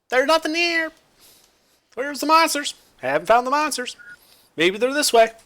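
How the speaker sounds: very high, squeaky little creature voice. Describing what you hear on arrival, voicing the creatures in squeaky little creature voices. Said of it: "then you just hear their squeaky voices".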